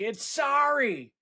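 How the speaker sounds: very high-pitched yell shouted from a distance. Retelling how a producer on set corrected a line: imitating someone yelling. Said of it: "yells out".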